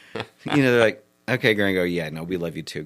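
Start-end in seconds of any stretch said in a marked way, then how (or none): 1.3-2.9 put-on, soft, dry, expressionless deadpan. Recounting how people answered him, the speaker imitates them: deadpan reply. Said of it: "they're pretty deadpan".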